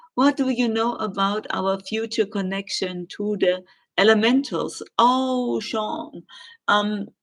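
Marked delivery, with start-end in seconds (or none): none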